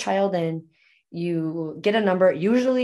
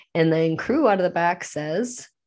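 plain

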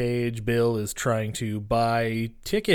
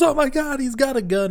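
very high, loud, over-the-top shrieking outburst; 5 dB louder than usual. Retelling a movie scene where a character shoots the ground: Nicolas Cage-style delivery. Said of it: "in his Nicolas Cagey kinda way".

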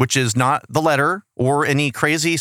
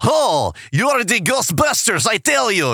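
put-on heavy Eastern European accent, much higher, slower; 7 semitones higher than usual. Describing a woman, the speaker quotes her in the thickest Eastern Bloc accent. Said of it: "like thickest Eastern Bloc accent".

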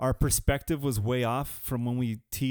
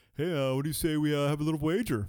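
put-on smug, swaggering, cocky tone; 2 semitones higher than usual. Retelling a golf partner proposing a bet: imitating a cocky friend. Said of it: "he gets all cocky and shit".

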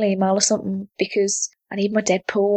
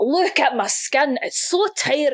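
slow, drawn-out skincare-advert voice; 5 semitones higher than usual. Doing a Gerard Butler impression of a moisturiser advert. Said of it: "my Gerard Butler doing an advert for, uh, moisturiser".

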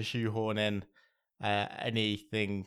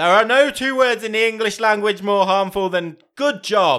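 furious yell, very loud, high and shrill; 10 semitones higher, 12 dB louder than usual. After asking whether J.K. Simmons has to be shouted, a host performs his line, shouting like J.K. Simmons. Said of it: "That was very loud".

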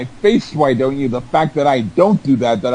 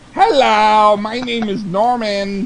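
put-on puppet voice, pitched higher; 7 semitones higher than usual. Drunk speaker blames a remark on his puppet, then speaks as it: talking as his puppet. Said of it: "that was my puppet talking".

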